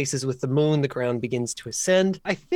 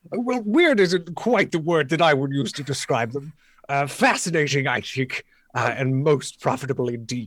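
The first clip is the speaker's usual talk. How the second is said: grandiose, persuasive scholarly character voice. Game master voices a scholar replying to a player: polished, grandiose NPC voice.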